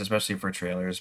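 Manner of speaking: usual speaking voice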